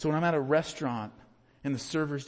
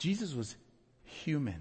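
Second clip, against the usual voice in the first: emphatic stretched pause before "human", raised pitch on "Jesus".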